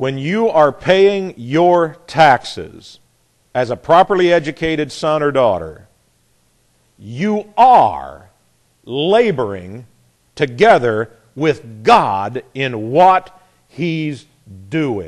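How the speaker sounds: slow, flat, deliberate delivery. Speaker states a point flat and plain to listeners, said slowly. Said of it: "And I said it slow".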